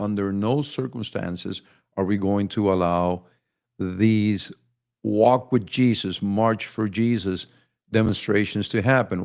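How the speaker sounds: ordinary talk, nothing marked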